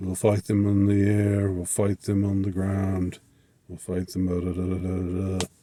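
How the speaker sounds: flat, unimpressed monotone, read as if nothing. Showing how a survivor reads the speech aloud, imitating a flat monotone reading. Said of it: "he just reads it in this almost monotone".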